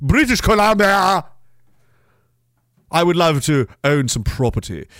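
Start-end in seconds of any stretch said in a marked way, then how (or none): 0.0-1.3 booming shout at full volume. Deciding to yell a place name from now on: yelled very loudly. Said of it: "I'm going to yell it from now on".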